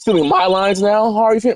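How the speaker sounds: voice cracking. Reading a character's line aloud, voice cracking. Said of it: "My voice cracked".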